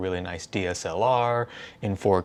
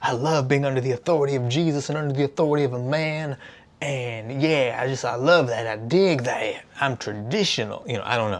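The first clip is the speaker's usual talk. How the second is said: bad fake Southern accent, much higher; 5 semitones higher than usual. Asking listeners, voicing someone who loves being traditional, in a bad fake southern accent. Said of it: "Sorry for the weird bad accent".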